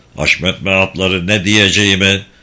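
plain reading voice

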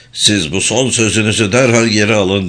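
plain

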